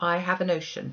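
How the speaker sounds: plain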